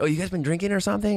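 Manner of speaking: bad, very high, quick put-on Latin American Spanish accent. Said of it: "I could do the better accent".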